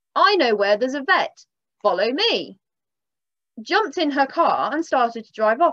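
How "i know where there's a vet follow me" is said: shouted, called-out delivery. Retelling what the lady shouted before driving off: imitating a shout. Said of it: "she shouted".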